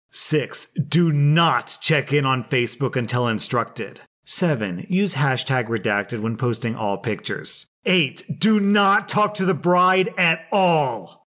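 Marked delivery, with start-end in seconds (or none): 7.9-11.1 yelling it out loudly, high-pitched. Reading out a list of wedding rules, yelling the all-caps one: yelling. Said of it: "I'm yelling that one".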